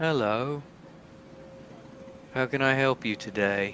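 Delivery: put-on softly spoken Liverpool accent. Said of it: "Liverpool abs- accent".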